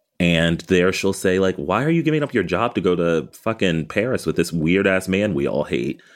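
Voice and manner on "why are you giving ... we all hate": ordinary delivery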